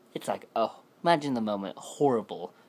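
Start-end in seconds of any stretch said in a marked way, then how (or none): none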